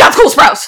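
utterly panicked, blurted exclamation. Retelling how someone suddenly reacted while looking out at the studio, imitating a panicked voice. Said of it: "in the most panicked voice I've ever heard".

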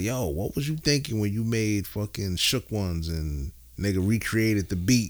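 ordinary talk, nothing marked

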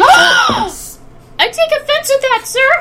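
very high, shouty, silly put-on character voice. Answering a remark about stupid gnomes, in a new character voice. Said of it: "my new voice".

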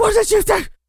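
shrill, very high, furious shout. Retelling a film scene of Tom Cruise yelling at Brad Pitt: imitating Tom Cruise yelling. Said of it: "Tom Cruise is all pissed off, yelling at Brad Pitt".

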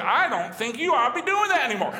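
loud, high, talk-show style lecturing tone. Imitating Doctor Phil telling someone to stop: Doctor Phil impression. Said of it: "that was a pretty good impression".

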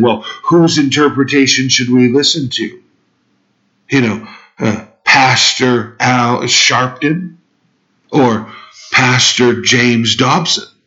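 needling, mocking tone. Retelling how Barack Obama dismissed Christians: imitating Barack Obama mocking. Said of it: "he mockingly said".

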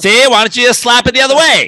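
put-on old-timey voice. Joking about shift proponents, imitating a 1920s accent. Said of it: "speaks in a nineteen twenties accent".

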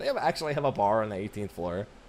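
normal talking voice

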